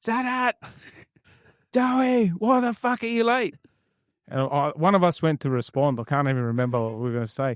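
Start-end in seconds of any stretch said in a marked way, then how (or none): 0.0-3.5 play-acted very high, shrill scream. Retelling arriving late to training, imitating Ayub screaming. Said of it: "Ayub just screams".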